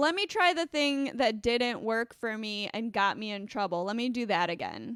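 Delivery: ordinary talk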